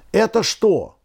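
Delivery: astonished, high cry of surprise. Uncle Fedya, as something heavy emerges from the lake by the boat: surprised exclamation. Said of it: "удивлённо воскликнул".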